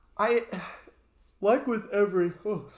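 very high, slow words stretched through a yawn. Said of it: "sorry, I'm yawning".

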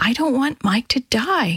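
whispering. Kitty lowers her head and answers dr. david, whispered. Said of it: "she whispered".

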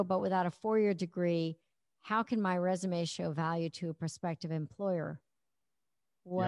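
normal talking voice

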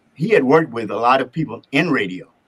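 ordinary talk

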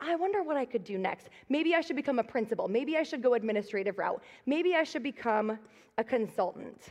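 ordinary talk

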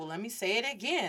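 ordinary delivery

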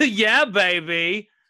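put-on horrible high catchphrase voice, baby dragged out. Giving in after saying the impression isn't needed: horrible Austin Powers impression. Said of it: "You guys don't hear my Austin Powers".

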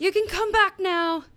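high, carrying yell, calling out. Calling the researchers back from down the hall: yelling. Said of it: "I'm the one yelling".

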